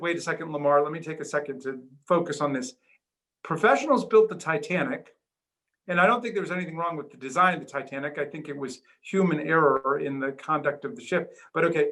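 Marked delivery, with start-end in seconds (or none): none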